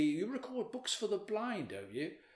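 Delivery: play-acted high, disparaging, looking-down tone. Audiobook narrator quoting what other actors once said, mimicking a disparaging remark. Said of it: "rather disparagingly".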